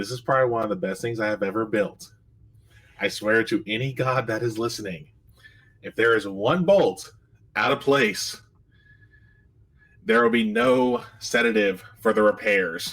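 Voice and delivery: very serious, grave and dead earnest tone. Voicing a character who looks at the player: very serious. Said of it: "he's gonna get very serious".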